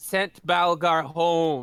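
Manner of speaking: as sarcastic as possible, heavy, dripping. A player tells the group what the lich did, very sarcastic. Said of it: "I say that as sarcastically as possible".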